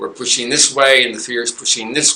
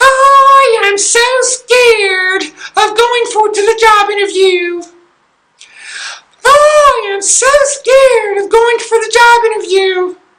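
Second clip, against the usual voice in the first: very high pitch with the I stretched out; 8 dB louder than usual. Coaching listeners on facing fear, the speaker demonstrates the exercise in a Donald Duck voice. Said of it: "You do that in a Donald Duck voice".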